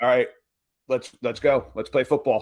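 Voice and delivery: normal talking voice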